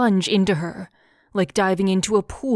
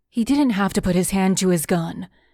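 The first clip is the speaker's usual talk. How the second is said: ordinary delivery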